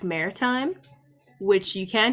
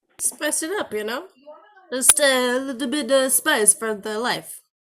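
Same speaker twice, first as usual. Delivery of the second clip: put-on New York accent, pitched up; 5 semitones higher than usual. Joking with the group about spicing things up: put-on New York accent. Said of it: "that New York accent".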